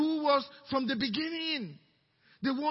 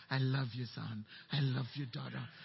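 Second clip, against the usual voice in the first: tender, very low, hushed, gentle, deep soft voice; 14 semitones lower, 8 dB quieter than usual. Telling listeners how God one day says it back: God's very gentle voice. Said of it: "God says it back in a very gentle voice".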